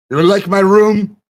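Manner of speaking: voice of a misshapen, deformed giant. Voicing a hunchback giant who questions intruders: voicing a deformed giant. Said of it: "He, he waves his hand at".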